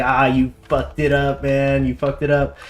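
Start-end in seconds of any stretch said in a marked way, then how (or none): none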